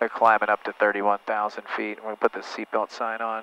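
relaxed cool pilot voice. Showing how all pilots sound making an announcement, relaxed cool pilot voice. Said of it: "all pilots have the same cool, like, voice vibe".

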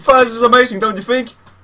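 high, loud, excited scream of delight. Retelling own reaction when nobody answered back; retelling excited screaming. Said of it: "So I was like screaming".

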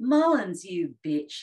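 yelled out, very loud scream. Retelling how a kid outside the milk bar screamed out: imitating a scream. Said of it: "this guy just screams out".

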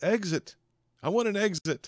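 very high-pitched, loud shouting. Voicing a guy who stands up and demands an exit: yelling. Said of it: "he yells out".

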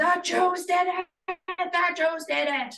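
shrill, very high, acted-out scream. Retelling how a landlord stormed into an apartment: imitating someone screaming. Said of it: "started screaming".

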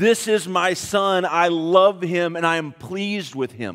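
ordinary talk, nothing marked

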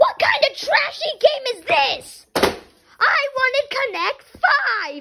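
high, shouted, bratty tantrum.

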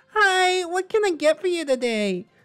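put-on anime schoolgirl voice. Retelling greeting a coffee customer, the speaker does an anime schoolgirl voice. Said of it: "I gotta do an anime schoolgirl voice".

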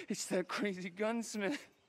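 normal talking voice

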